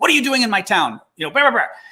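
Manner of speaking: mock grandma yelling. Retelling a Ukrainian grandma confronting a Russian soldier, imitating grandma yelling. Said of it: "kind of yelling at him and going".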